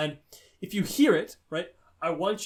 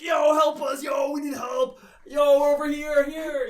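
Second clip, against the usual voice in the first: mock, very high, loud, drawn-out screaming; 10 semitones higher, 6 dB louder than usual. Retelling screaming out after hearing a far-off whistle: imitating screaming for help. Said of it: "We're just screaming like".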